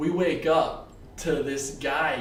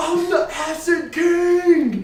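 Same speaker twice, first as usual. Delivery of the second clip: mock screaming, higher and louder; 8 dB louder than usual. Retelling what a noisy guy nearby kept yelling: imitating a guy screaming. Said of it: "this guy was screaming".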